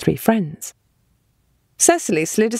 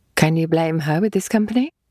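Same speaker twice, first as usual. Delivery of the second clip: ordinary delivery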